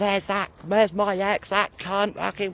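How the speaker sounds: play-acted spiteful, abusive screaming of insults. Retelling how an ex screamed abuse up the road: imitating someone screaming abuse. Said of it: "she started screaming at".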